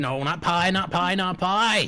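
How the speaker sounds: excitable dog character voice. Voicing the excited dog who loves word games: excited talking dog voice. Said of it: "He says".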